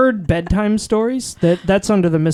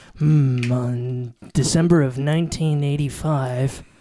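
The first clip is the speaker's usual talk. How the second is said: low, slow mock true crime narrator voice. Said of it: "you got that voice".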